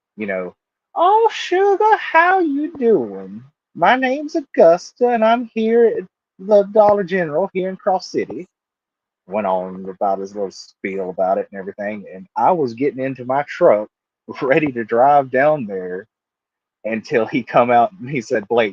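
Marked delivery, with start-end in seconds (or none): 1.0-8.5 put-on Southern woman's voice, very high, swooping.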